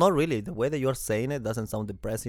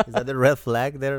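usual speaking voice

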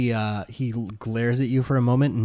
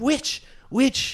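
shrill, very high-pitched cry; 14 semitones higher than usual. Game master voicing a hostile character accusing a player, shouting. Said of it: "And he's like shouting at".

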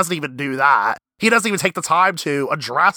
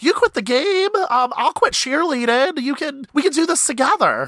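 put-on excited voice, much higher; 11 semitones higher than usual. Retelling a TV scene where Peyton answers Nathan, imitating Peyton, all excited. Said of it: "Peyton gets all excited".

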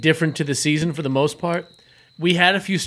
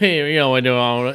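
put-on southern cartoon-character voice, lower; 4 semitones lower than usual. Imitating how the old Southern police chief spoke: imitating the police chief, Boomhauer-like. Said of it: "He was Boomhauer, but in real life".

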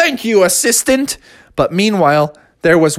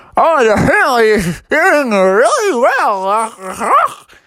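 play-acted muffled, garbled mouth-full talk, very drawn out; 5 semitones higher than usual. Telling a story, voicing a patient whose mouth is full of hands: talking with hands in mouth. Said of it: "Bubby had the hands in his mouth, so he couldn't talk".

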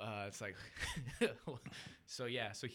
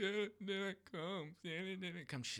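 put-on hard bawling, higher and slower; 10 semitones higher than usual. Retelling being a child on christmas morning, acting out bawling. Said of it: "I remember just bawling".

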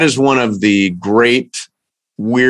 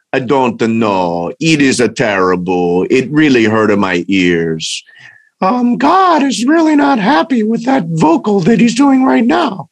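put-on, animated, high-pitched talking-dog voice; 5 semitones higher than usual. Voicing one side of an imagined conversation at home, put-on voice in made-up conversation. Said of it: "they can have complete conversations like".

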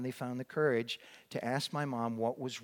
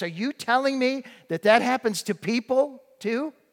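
mock frightened little boy voice, high, rising panic; 11 semitones higher, 11 dB louder than usual. Recalling asking his mom about death as a four-year-old, re-enacting rising panic. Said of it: "with rising panic in my voice".

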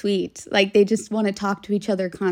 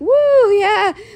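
cringey, high, loud mock "woo yeah" cheer. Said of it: "Would it be cringe if I was like".

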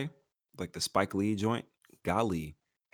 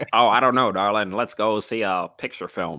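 put-on old-timey 1930s voice, louder; 7 dB louder than usual. Imagining people going to the movies in the 1930s: imitating a 1930s moviegoer. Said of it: "Why were they sitting in there in nineteen thirties?".

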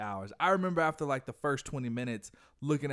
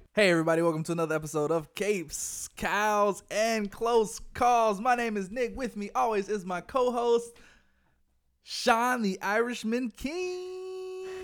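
pumped, excited yelling in a very high voice; 10 semitones higher, 5 dB louder than usual. Podcast host opening an episode and introducing his co-host, yelling. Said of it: "I feel like I had to yell, too, because you were yelling a lot".

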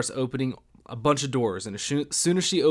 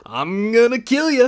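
put-on crazy maniac voice, higher and louder; 11 semitones higher, 9 dB louder than usual. Showing how to scare off an intruder when home alone: acting like a crazy maniac. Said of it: "act like the maniac".

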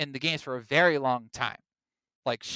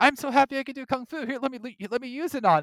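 imitated princess voice; 10 semitones higher than usual. Imitating the princess happily offering her kung fu: Princess Peach voice. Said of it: "she would be the one who'd be like".

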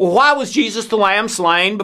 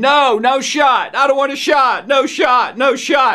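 put-on tearful, bawling, screaming little-kid wail; 4 semitones higher than usual. Retelling a childhood fear of a shot: imitating a screaming, crying child. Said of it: "I just started screaming and crying".

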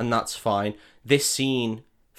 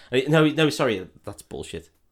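ordinary talk

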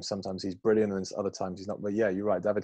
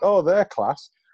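put-on very loud, very high Northern English accent; 10 semitones higher, 10 dB louder than usual. Podcaster quoting a remark about footballers, in a Northern English accent. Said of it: "There's Northern accent".

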